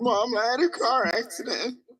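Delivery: high, in-character daughter voice. Pretending on a phone call to be the arrested daughter: impersonating the arrested daughter. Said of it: "he impersonates the child that got arrested".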